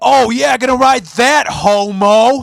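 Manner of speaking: mock, loud, jeering bro scream, stretching "homo". Retelling what a passing driver screamed at the speaker; retelling a scream. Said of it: "he just screams".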